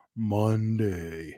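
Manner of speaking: big cartoon cat character voice. Speaker tries himself out as a voice actor for the role, Garfield voice. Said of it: "Maybe I could".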